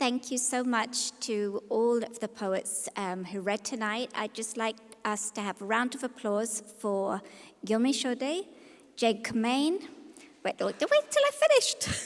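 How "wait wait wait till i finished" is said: voice shooting way up, very high and raised. Stopping the audience from clapping before the list of names ends, high-pitched voice.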